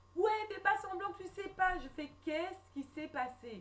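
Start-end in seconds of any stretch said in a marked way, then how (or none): 0.2-1.8 sobbing, tearful, distraught crying outburst. Retelling a man's answer to 'what happened?', imitating someone crying. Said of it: "il dit casse-toi en pleurant".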